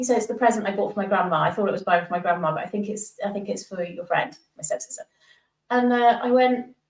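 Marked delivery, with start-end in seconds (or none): none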